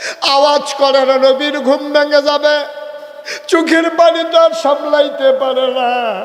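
high impassioned preaching wail.

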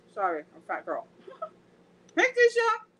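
very high-pitched talk through a mouthful. Speaker on a video call greeting others while eating: talking with mouth full. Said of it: "I'm talking to my mouthful".

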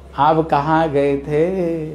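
very slow, drawn-out, knowing tone. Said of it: "इसका मतलब आप जहाँ गए थे ना, हमें पता है".

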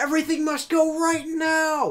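mock excited announcer shout. Mocking mattress commercials, imitating an excited ad shout. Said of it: "some people get so excited about mattresses".

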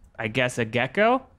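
plain

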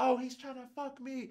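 acted-out, high, yelled out across a distance. Retelling how a woman yelled out as she was taken from the room, retelling her yell. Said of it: "she yelled out".

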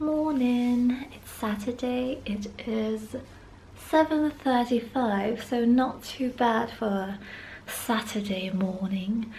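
accent drifting toward English. Greeting on a saturday morning, more english accent. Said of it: "Why is my accent more English today?".

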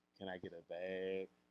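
slow, pitiful, whiny, pathetic pleading tone. Mocking a man in a clip asking for a bag: imitating a pathetic plea. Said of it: "He sounds pathetic".

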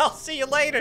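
high, mocking, parroting voice.

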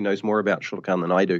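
ordinary talk, nothing marked

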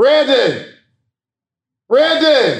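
yelling out loudly.

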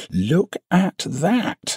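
exultant, triumphant, very high-pitched. A narrator reads a man calling the narrator over to the wall, triumphant. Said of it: "he said triumphantly".

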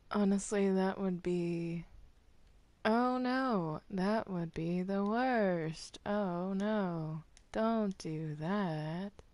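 slow, sarcastic, mock-dismayed tone.

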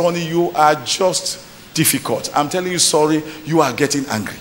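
ordinary delivery

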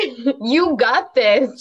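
loud, carefree, unbothered, whole-body tone. Voicing what her face would say without caring, louder, like not caring. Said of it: "Louder, like you don't care".

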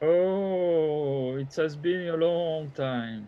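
slow, dragging, disturbing moan with drawn-out "oh". Voicing the figure whose speech is being described, in a slow moaning voice. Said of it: "slow and moaning".

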